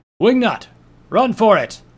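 very loud, high-pitched, shrill yell. The stranger throws a flash bomb and shields the narrator: yelling.

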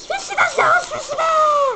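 very high, mocking, silly voice. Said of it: "Non, non, tu vas pas commencer".

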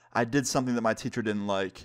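usual speaking voice

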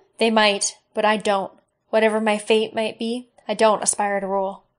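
plain reading voice

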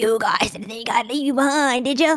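otherworldly alien creature ruler's voice. Speaker voicing the Alien King's line to the group, in Alien King voice. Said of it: "Gonna do your alien voice".

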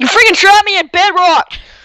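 furious raging rant, pitch sky-high. Playing a game with a friend who trapped him in bedrock, fake raging. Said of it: "Stop raging".

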